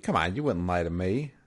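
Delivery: playful, teasing, sarcastic ribbing tone. Acting out how a character might tease someone about lying: imitating a sarcastic, playful tone. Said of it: "in a sarcastic way".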